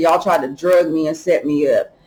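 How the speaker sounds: plain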